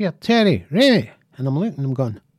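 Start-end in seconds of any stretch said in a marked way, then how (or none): 0.0-1.1 put-on high-pitched shout. At a Saxon gig, the speaker retells his cousin calling out to him, imitating a cousin shouting. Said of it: "And he shouts".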